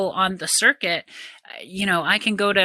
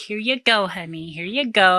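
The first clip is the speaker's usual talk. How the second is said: acted-out playful, teasing, talking-down, coaxing tone. Retelling how a partner spoke on the pickleball court: imitating someone teasing.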